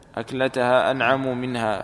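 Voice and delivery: ordinary talk, nothing marked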